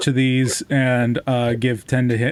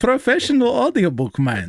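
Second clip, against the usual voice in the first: fake Russian accent, very high-pitched and swooping; 10 semitones higher than usual. Joking about their audiobook style, the speaker does a fake Russian accent. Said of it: "I don't know why I'm Russian".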